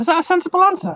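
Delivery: voice jumping very high, squeaky. Giving a quiz answer and asking if it was sensible, voice going really high. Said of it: "my voice went really high when I said that".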